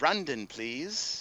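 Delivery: put-on Irish accent. Recounting a male voice heard saying a name, in an Irish brogue. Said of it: "he did it in an Irish brogue".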